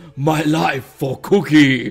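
loud warrior cry, booming, very slow. Asked to say the zealot quote from StarCraft, zealot voice. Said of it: "say in a zealot voice from StarCraft".

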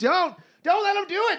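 acted-out very high, shrill screaming. Retelling watching a gross movie, acting out their past self; retelling screaming at the tv. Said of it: "I'm screaming at the TV".

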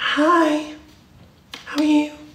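very high put-on girly girl voice. Trying out voices, greeting someone in a girly voice. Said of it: "I can do a girl voice".

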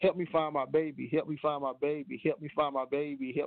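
put-on tearful, crying woman's voice. Retelling a woman at a pileup begging for help: imitating a crying woman's plea. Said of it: "she was just crying and she was saying".

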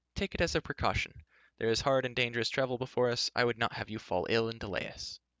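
plain

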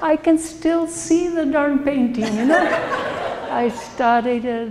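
laughing while speaking.

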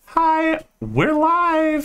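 very high, sing-song, swooping show host voice. Describing how she would sound if she were hosting, imitating her hosting voice. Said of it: "She would totally be like".

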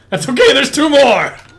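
high voice cracking, breaking on words. Taunting the opponent during a game, voice cracking. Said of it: "My voice cracked again".

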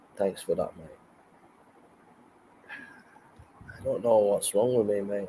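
nearly crying, choked up. Thanking someone named John for their kindness, nearly crying. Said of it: "I'm nearly crying, mate".

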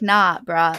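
mock belligerent, defiant tone. Acting out a character's retort to God in a dream: mock belligerent retort. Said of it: "slap it back in the God's face and be like".

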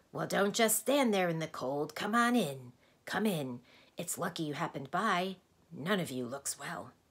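odd, strange, croaking way of talking. He goes on speaking to the group before they can answer; strange croaking voice. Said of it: "he went on in a strange croaking way".

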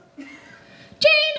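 very high-pitched voice. Doing an impression of a sister calling a name: imitating sister's voice. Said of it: "this is my impression of my other sister".

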